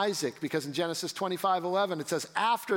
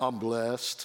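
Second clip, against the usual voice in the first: very deep, very low put-on voice; 7 semitones lower than usual. Quoting a man's same answer every time, imitating a man's deep voice. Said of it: "he had this real deep voice. ... I can't even say it as deep as he said it".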